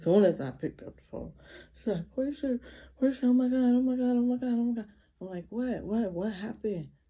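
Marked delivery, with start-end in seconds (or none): 2.1-4.9 high, loud, frantic hysterical sobbing. Speaker re-enacting a caller who phoned with bad news: imitating someone crying hysterically. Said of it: "She's crying like hysterically".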